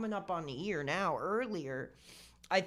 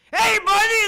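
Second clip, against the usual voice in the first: mock drunk shouting, higher and louder; 18 dB louder than usual. Describing a drunk stranger at the bar, imitating a drunk guy screaming. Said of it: "screaming in your ear".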